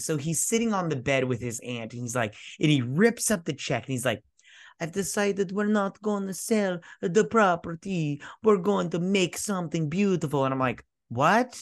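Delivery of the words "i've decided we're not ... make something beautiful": fake movie-style Italian accent, pitched up. Retelling a story, quoting a man who rips up a check, in a put-on accent. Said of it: "Better accent".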